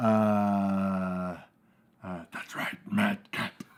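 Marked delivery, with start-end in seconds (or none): 2.3-3.5 breathy, whispered character voice. Answering a request for a Claw impression: Dr. Claw voice. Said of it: "give me your best Claw impression".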